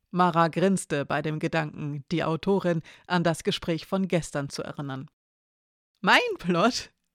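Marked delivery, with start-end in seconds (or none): 6.0-6.8 playfully doubtful, feigned skeptical tone. The author, asked about her plot, asks back mock-skeptical. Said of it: "fragte Elena gespielt skeptisch".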